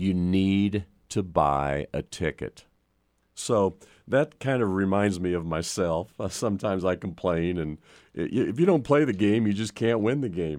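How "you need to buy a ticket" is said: deep, low, slow, somewhat angry, annoyed voice. Telling a joke where God answers a lottery complainer: deep, somewhat angry God voice. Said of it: "in a deep, somewhat angry voice".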